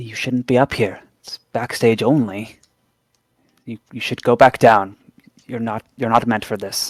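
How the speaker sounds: guarded, discreet, cautious voice with halting repeats. Narrator voices one of them warning a player character from the crank, in a quiet tone. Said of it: "says in a quiet tone".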